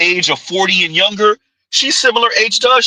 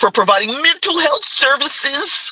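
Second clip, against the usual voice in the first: smug, superior tone, pitched higher; 6 semitones higher than usual. Quoting someone's self-description of their services: mock smug tone. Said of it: "gotta say it with the smug ass tone".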